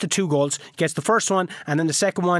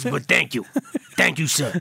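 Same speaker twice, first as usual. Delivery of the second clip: put-on New York Italian accent, much lower; 2 semitones lower than usual. Voicing a player after an 11-0 friendly, speak in a new york italian accent. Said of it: "They're Italian now".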